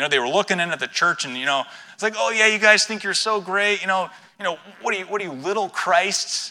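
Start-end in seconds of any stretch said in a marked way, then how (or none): 2.2-6.5 put-on mocking, jeering tone, much higher. A speaker acting out the church's enemies taunting the disciples, imitating a mocking taunt. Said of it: "tongue in cheek in a mocking tone".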